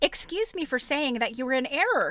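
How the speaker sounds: ordinary delivery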